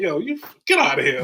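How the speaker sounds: derisive, scoffing, dismissive tone. Retelling how coaches answered his request to return kicks: imitating a scoffing reply. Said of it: "scoffed at me".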